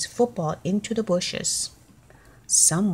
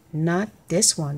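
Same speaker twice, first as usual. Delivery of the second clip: usual speaking voice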